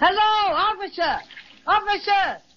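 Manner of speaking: big-voiced, high, loud yell. Character calling to a policeman who cannot hear, in a big yelling voice. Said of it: "Let me do the yelling".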